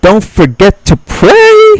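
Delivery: very high-pitched, swooping, sing-song voice. Podcast host's reminder to listeners before the news, in a high-pitched voice. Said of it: "pray just like that in a high-pitched voice".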